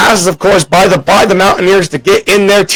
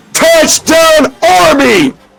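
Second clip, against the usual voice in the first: excited cracking voice, much higher; 9 semitones higher than usual. Watching a touchdown play, calling it with an excited cracking voice. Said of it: "makes my voice crack".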